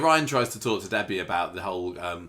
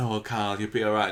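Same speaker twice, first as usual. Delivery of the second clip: mocking put-on voice sending the line up. Retelling a scene that was hated, imitating Abby. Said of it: "Abby going".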